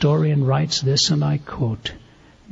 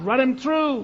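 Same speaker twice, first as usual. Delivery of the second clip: high-pitched screaming; 11 semitones higher than usual. Retelling the arena story where somebody screams out: retelling a scream. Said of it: "somebody screams out".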